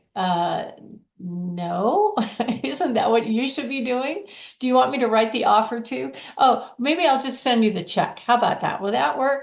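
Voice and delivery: mocking, sarcastic tone. Retelling own reply to a buyer's agent: retelling own sarcastic reply. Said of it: "I know I'm being sarcastic".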